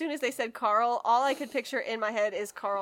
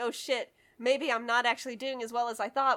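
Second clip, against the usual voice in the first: plain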